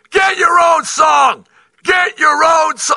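mock very high, drawn-out screaming. Speaker recalls watching a game against one of their teams, re-enacting screaming at the TV. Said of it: "I am literally screaming at the television".

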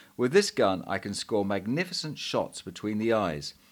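ordinary talk

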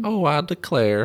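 Southern accent, pitched very high. Comparing american regional accents, southern accent. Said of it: "It's a different than a Southern accent".

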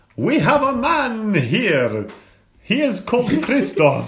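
put-on slow Romanian accent. A caller on the phone in a bit, speaking in a Dracula-style Romanian accent. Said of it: "I have one Romanian accent, and that is Dracula".

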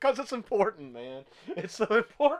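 speech through laughter. Asked why they keep laughing, the speaker answers: laughing while speaking. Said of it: "Why are you laughing every time you say that?".

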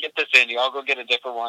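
ordinary delivery

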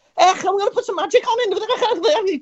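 very high, slow, drawn-out Scouse accent. Showing how someone could have voiced a line: Scouse accent like Jamie Carragher. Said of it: "All you had to do was be like".

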